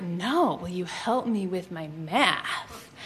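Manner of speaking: low, slow, suggestive murmur. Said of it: "he's like".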